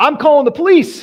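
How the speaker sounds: very loud, very high, shrill voice projected for all. Retelling what a woman said when the speaker waited to see the mayor, loud voice. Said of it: "she says it with this loud voice".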